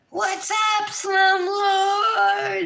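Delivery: put-on, very high, loud, stretched-out all-out yell. Retelling yelling from the kitchen at the person wrecking the porch, retelling a loud yell. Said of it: "I'm just yelling as loud as I can".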